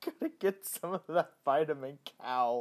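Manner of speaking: words broken up by laughing. Recording late at night while tired, laughing while talking. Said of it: "Sorry, I'm laughing".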